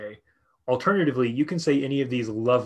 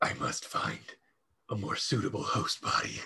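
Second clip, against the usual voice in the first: whispered put-on deep, breathy demon voice; 4 semitones lower, 9 dB quieter than usual. Prompted to roll back their eyes and speak in a deep demonic voice. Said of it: "say in a demonic voice".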